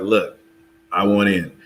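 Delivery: ordinary talk, nothing marked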